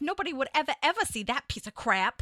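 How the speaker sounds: imitated Boston accent throughout the delivery. Recalling a guest star in Fever Pitch, the speaker quotes her line in a Boston accent. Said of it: "her Boston accent was like".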